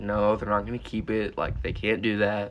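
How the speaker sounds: ordinary delivery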